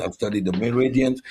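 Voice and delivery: ordinary delivery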